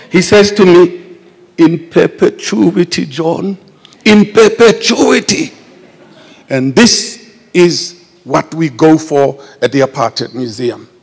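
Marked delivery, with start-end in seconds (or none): 1.5-5.5 whimpering voice caught between crying and laughing. Retelling what George said to him, imitating George's whimpering voice. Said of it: "in that whimpering way".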